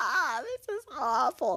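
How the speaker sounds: mock weepy sobbing, high and drawn-out crying voice. Retelling a prank call where the woman cried: imitating someone crying. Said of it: "you hear her cry, and you hear her go".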